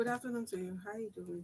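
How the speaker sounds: very quiet, softly spoken voice. Answering a greeting from the other speaker, in a soft voice. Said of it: "Look at that soft voice".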